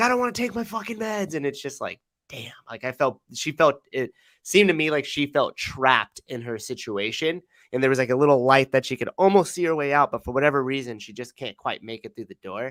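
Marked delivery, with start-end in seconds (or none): 0.0-1.3 very high, freaked-out, panicking voice. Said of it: "she's like".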